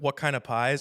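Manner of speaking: plain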